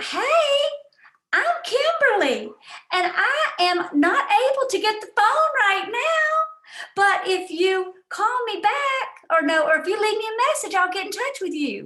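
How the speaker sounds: high, loud, put-on Southern accent. Imitating a classmate's voicemail greeting, put-on southern accent. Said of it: "Southern accent and all".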